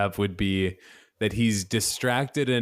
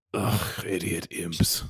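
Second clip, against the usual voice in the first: whispered, breathy, grumbling mutter; 4 semitones lower than usual. Voicing a character walking back into the party: muttering under his breath. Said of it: "mutters under his breath".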